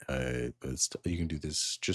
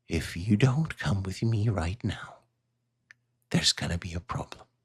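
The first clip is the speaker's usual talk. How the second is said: put-on elderly woman's voice; 2 semitones higher than usual. An old woman in the game turns to the two player characters; old lady voice. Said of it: "old lady. / So she is kind of like whispering down, and she'll stand up and like close the hatch and turn to the two of you and say, / old lady".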